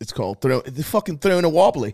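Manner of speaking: Australian-sounding voice. Explaining a slang phrase to another speaker, sounding australian. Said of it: "that sounded Australian".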